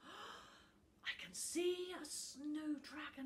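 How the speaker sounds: very slow, drawn-out, high half-whisper. After gasping at the book's open pages, he speaks, half-whispering. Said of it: "he whispered".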